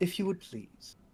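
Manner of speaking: soft, formal, courtly manner.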